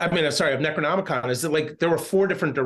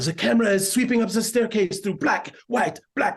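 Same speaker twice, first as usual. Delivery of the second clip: put-on clumsy, heavy French accent, pitched up; 5 semitones higher than usual. Recalling a director giving directions to an actor, Christoph Gans French accent. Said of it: "I might do a French accent and butcher it".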